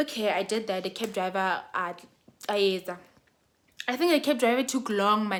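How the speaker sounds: ordinary delivery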